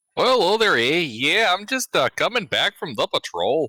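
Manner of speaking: put-on high-pitched Wisconsin accent. Voicing the character Flynn during a tabletop game: Wisconsin accent. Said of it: "I don't think Wisconsin is in Wales".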